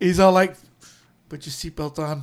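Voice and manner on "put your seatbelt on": soft, dead calm, quiet delivery. Retelling an FBI agent's line from a movie: imitating a calm FBI agent. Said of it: "real calm and shit".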